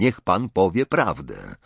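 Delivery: ordinary delivery, nothing marked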